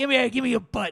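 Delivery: grabby, high little troll voice. Speaker acting out how people behave with their partner: little troll voice. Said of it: "talk in that voice and make this face".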